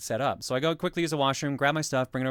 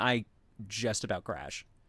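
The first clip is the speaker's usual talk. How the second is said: ordinary delivery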